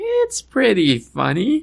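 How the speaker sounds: very high voice, swooping and shooting up. Repeating own earlier remark about a show: voice going up a little. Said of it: "my voice went up a little bit".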